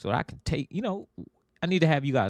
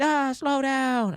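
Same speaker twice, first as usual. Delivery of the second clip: shrieking, very high-pitched scream; 3 dB louder than usual. Retelling a go-kart ride, imitating a passenger screaming: imitating wife screaming. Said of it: "she's screaming at me".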